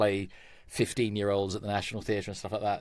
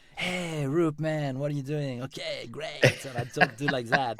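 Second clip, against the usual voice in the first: put-on French accent, higher pitch, French vowels; 5 semitones higher than usual. Showing how you impersonate your longtime friend Cedric: imitating Cedric's French accent. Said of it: "impression of a a French person speaking English".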